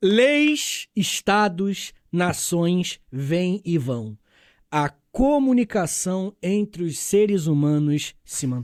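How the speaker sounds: deliberate, unhurried, paused, "leis" drawn out. Addressing the group, speaking slowly. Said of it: "Eu gosto quando tu fala pausadamente".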